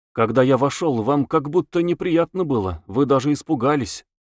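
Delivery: ordinary delivery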